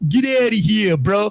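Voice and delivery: put-on, exaggerated Brooklyn guy accent. Trying to imitate how Brooklyn guys talk, in an attempted Brooklyn accent. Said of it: "I can't talk Yankee".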